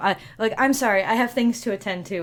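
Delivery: hasty, flustered servant voice. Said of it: "she very hastily walks away".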